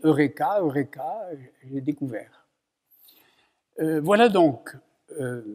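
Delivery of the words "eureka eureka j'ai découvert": normal talking voice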